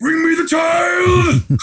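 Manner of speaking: put-on yelling commander voice. Imitating a movie general's orders about a baby: General Kael yelling. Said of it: "all that guy does is yell".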